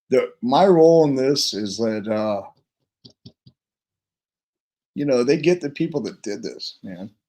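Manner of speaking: emotional voice with faltering words. Speaking about his role for them, admitting he is getting emotional: getting emotional. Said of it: "oh, I'm getting emotional".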